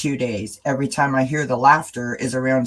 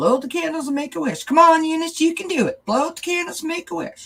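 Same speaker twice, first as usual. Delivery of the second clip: put-on very high, horrible, laid-on Southern accent. Quoting a Carol Burnett clip shared on mom's birthday, in a horrible Southern accent. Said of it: "I do a really horrible Southern accent".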